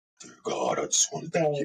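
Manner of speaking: sinister, menacing villain voice. Retelling a man who suddenly began praying aloud, Darth Vader voice.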